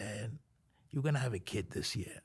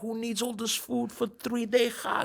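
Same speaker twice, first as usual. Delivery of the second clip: very high-pitched, shrill, loud screaming; 13 semitones higher, 7 dB louder than usual. Speaker retells screaming at her over an oversized suitcase, retelling screaming at her. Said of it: "was screaming at her".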